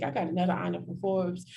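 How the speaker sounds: ordinary talk, nothing marked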